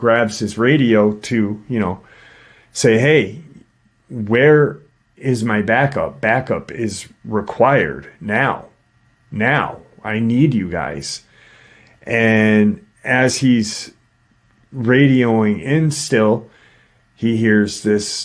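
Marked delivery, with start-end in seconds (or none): none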